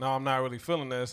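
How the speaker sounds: usual speaking voice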